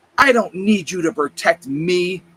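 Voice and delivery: hostile, venomous tone. Retelling a bystander's interruption, imitating a venomous retort. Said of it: "venom in his voice".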